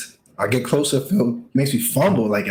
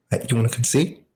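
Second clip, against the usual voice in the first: ordinary delivery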